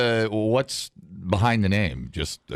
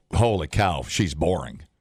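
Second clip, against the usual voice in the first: ordinary delivery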